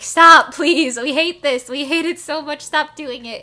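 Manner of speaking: loud, repeated, pleading cry. Voicing viewers' comments begging someone to stop: imitating pleading commenters. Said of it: "pleading with him".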